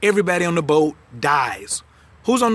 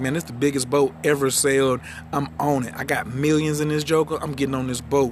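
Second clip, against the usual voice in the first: ordinary talk, nothing marked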